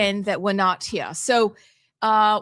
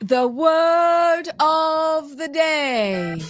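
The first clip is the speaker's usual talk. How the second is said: high put-on British accent, stretching of; 8 semitones higher, 3 dB louder than usual. A speaker announces the word of the day, in a British accent. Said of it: "Do you want me to do it in a British accent".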